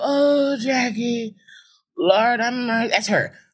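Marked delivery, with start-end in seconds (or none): 0.0-2.4 put-on sad voice, higher pitch. Speaker describes an aunt who always sounds sad, imitating aunt's sad voice. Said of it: "A very sad sounding woman".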